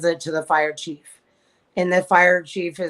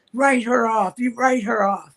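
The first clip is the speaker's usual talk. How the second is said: mock half-yell, pitched up and mild; 5 semitones higher than usual. Retelling the representative leaving angrily: imitating someone yelling. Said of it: "he's yelling at his assistant".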